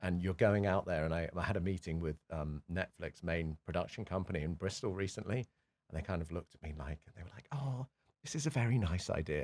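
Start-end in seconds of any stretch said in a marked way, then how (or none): 7.5-9.5 put-on patronizing voice, slow and pitched up. Speaker recounting a meeting with a production company, mimicking them: mock-patronizing voice. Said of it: "in their most kind of patronizing voice".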